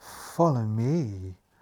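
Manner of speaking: purring, cat-like delivery. A brooding maid leads the visitors towards double doors, purring. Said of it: "purrs the brooding maid".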